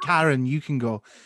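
normal talking voice

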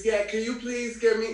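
very high woman's voice. Describing a woman to another speaker, imitating the woman's voice. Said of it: "Her voice sound like this".

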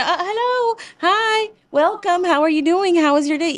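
outgoing, talkative, chatty tone at high pitch. Speaker describes how he greets people everywhere he goes, imitating a chatty greeting. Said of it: "él llega a donde sea al gimnasio".

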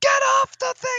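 very high, very loud, shrill scream. Recalling how the speaker gained a voice with kids on the playground: mock screaming across it. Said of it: "I would be screaming across the playground".

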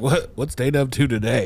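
sarcastic, mocking. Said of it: "You sarcastically say her name".

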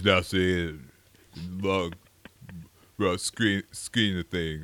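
deep tough-guy voice, halting, stumbling, groping for words. Retelling an actor changing his mind about a script: Sylvester Stallone impression. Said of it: "really good impression of Sylvester Stallone".

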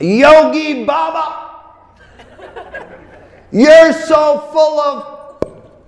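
piercing, shrill, very high cry. Retelling a voice from the audience yelling at Yogi Baba, retelling a shrill yell. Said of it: "this shrill voice".

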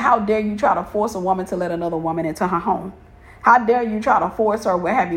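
usual speaking voice

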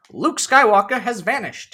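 loud, very high, booming put-on announcer voice. Reading the opening crawl aloud: Korra announcer voice. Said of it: "I talk in the Korra voice. The Korra announcer voice where I read the crawl".

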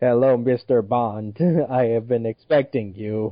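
put-on voice sounding like computer speech. Joking about a scientist cast as a Bond villain: Stephen Hawking voice. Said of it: "Stephen Hawking wants to play as a Bond villain".

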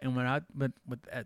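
stuttering and stammering, tripping over words. Wrapping up and signing off to listeners, stuttering. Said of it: "I'm stuttering".

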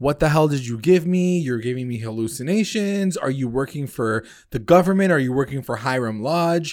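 furious, enraged, paranoid-sounding outburst. Retelling a scene where a character confronts a therapist: imitating an enraged outburst. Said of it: "so enraged".

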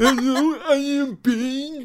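put-on Indian accent, high, loud. Asked by another speaker to put on an accent: Indian accent. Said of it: "Put on an Indian accent".

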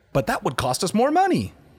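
high, swooping, mocking corporate tech-company whine.

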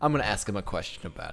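normal talking voice

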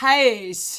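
loud Northern Irish house, many vowels squeezed together. Explaining how many vowels get crammed into one word: northern irish "house". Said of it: "especially in the Northern Irish accent ... there's so many vowels crammed into a very short amount of space".

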